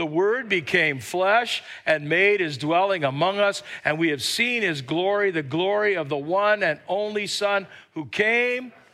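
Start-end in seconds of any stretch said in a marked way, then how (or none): none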